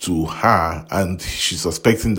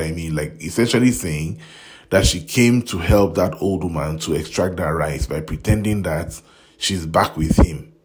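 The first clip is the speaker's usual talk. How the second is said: plain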